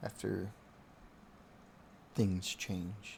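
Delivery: quiet, resigned murmur under the breath.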